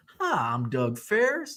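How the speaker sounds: soft, slow, gentle Southern drawl. Retelling a dentist character introducing himself before a root canal, in a Southern accent. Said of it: "He's got this like Southern accent".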